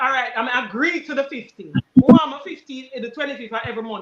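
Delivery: normal talking voice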